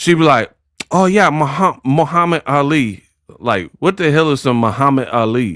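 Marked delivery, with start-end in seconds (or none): 0.9-3.0 put-on lazy, slow, sloppy enunciation. Imitating Clarissa talking slowly: imitating Clarissa's lazy speech. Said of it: "can't even talk slow without being lazy".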